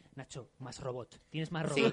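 acted, very tender, gentle, kind coaxing. Imagining what the director said to the robot actor: imitating a tender director. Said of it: "como muy tierno te dijo".

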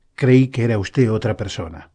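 ordinary delivery

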